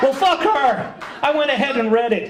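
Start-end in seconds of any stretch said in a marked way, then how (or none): 0.0-0.9 high, laughing, exaggerated defiant outburst. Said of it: "defiant retort said twice".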